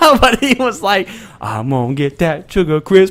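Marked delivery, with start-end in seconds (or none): 1.4-3.1 put-on Southern accent, played up. Quoting a character going after an old lady's cereal, in a southern accent. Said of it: "That is a southern accent".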